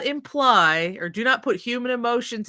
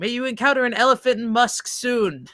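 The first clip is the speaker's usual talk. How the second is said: ordinary delivery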